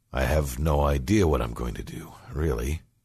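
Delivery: spoken with a sigh. A man answers Billy about his plans after the march: sighing. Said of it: "he sighed".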